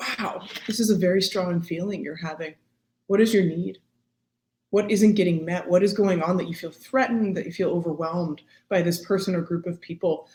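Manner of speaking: ordinary talk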